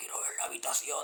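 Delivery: put-on hoarse voice. Recounting a scene where a tenant asks to see the room, in a put-on hoarse voice. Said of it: "así con la voz ronca".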